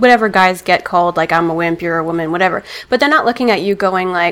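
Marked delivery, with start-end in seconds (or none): none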